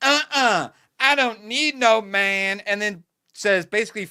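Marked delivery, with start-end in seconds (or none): 0.0-2.6 mocking, put-on sassy princess voice. Retelling a game ending, imitating Princess Peach. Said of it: "she goes".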